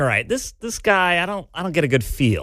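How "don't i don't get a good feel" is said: normal talking voice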